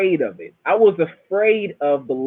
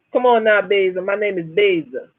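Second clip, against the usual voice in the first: put-on accent from the Bahamas; 3 semitones higher than usual. Showing how the mother's first husband talked, in Basil Riley's heavy Bahamian accent. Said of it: "He used to talk like this".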